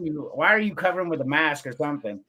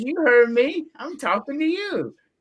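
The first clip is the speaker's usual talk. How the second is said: nasty, mean, goading jeer, pitched way up; 11 semitones higher, 3 dB louder than usual. Retelling how a game character picks fights with strangers: imitating a mean taunt. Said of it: "he says some mean shit".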